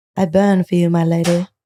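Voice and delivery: put-on British accent. Showing how the characters in a favorite show speak: british accent. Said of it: "the British accent".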